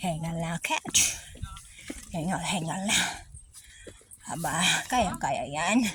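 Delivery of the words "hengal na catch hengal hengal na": soft, low, breathless panting. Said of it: "Hinihingal talaga ako magsalita".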